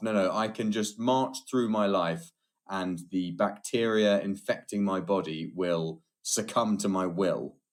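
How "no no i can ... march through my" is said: ordinary delivery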